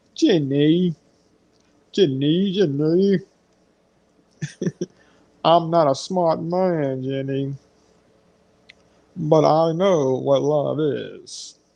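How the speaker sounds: very slow delivery, every word drawn out. Quoting the movie line, in a Forrest Gump impression. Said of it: "That sound like Forrest Gump".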